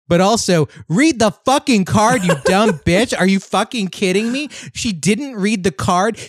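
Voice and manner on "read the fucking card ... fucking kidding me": loud angry yelling. A speaker on a microphone, berating a woman from a story, yelling. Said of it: "the way I'm yelling now into my microphone".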